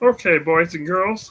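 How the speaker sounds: very high-pitched cartoon mouse voice. Asked to do a Mickey Mouse voice, the speaker tries it: Mickey Mouse voice. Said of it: "Mickey Mouse".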